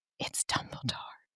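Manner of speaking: sure, delighted, gleeful whisper. Retelling what a friend whispered to the speaker, imitating her gleeful whisper. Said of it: "very confidently and gleefully she whispers to me".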